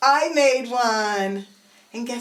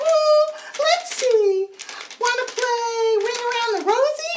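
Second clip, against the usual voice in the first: squeaky, very high-pitched puppet voice; 12 semitones higher than usual. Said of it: "give each puppet a different voice".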